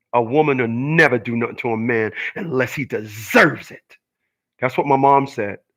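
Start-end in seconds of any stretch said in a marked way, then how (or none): 0.1-3.9 mock dark, foreboding, very sinister, ominous voice. Quoting what the speaker's mom said to them, imitating a sinister voice. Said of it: "in a very sinister voice".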